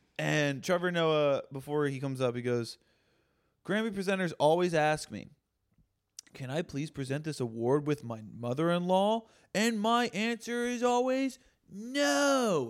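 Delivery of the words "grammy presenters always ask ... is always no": disgusted delivery with a long drawn-out final "no". Retelling an awards-show joke, imitating Trevor Noah's disgusted delivery. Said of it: "he said it like that with the fucking, like, disgusted look".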